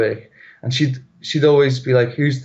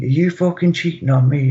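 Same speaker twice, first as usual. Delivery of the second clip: furious put-on screaming, toned down; 2 semitones higher than usual. Retelling being woken at night by a partner: imitating someone screaming. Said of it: "she starts screaming at me".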